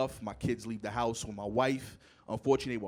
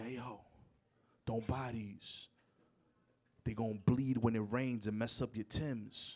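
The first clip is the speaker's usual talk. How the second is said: soft, hushed half-whisper; 6 dB quieter than usual. Retelling what a woman at the store counter told them, the speaker imitates her half-whisper. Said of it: "she whispers".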